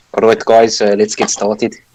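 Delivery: easygoing, cool South African accent. Welcoming the group back to the d and d session, in a south african accent. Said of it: "Here's [name]'s cool South African accent".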